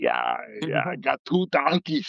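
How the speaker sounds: put-on deep, swooping old-man voice with swinging tune. Retelling how a comedian now does the old Arnold voice: old Arnold Schwarzenegger voice. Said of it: "now he does the old Arnold voice".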